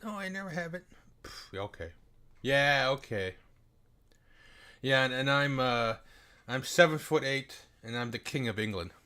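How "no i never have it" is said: put-on sweet, all-innocent tone, pitched up. Mocking the other side's denial: mock innocent voice. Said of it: "they're trying to play all innocent".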